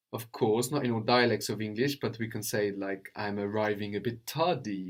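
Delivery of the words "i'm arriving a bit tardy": normal talking voice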